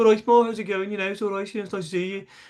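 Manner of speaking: quick, high-pitched Brummie Birmingham accent. Showing how a friendly greeting would sound done as birmingham: birmingham accent. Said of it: "if you did it as Birmingham".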